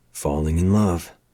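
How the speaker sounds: plain reading voice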